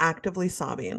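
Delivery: ordinary delivery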